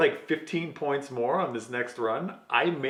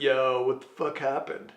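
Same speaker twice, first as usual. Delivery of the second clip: casual, friendly voice. Retelling what Jesse said when the driver got back: Jesse Wood voice. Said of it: "In typical Jesse Wood voice".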